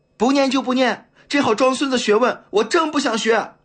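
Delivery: very high, loud, aggrieved yell. A youth dragged from the classroom and kicked turns and yells back, loud shouting. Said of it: "大声吼道".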